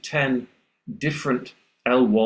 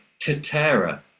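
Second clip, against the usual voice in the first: English alveolar t, higher pitch; 3 semitones higher than usual. Retelling students imitating the teacher's Spanish: imitating English-accented Spanish. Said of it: "Of course we can imitate you".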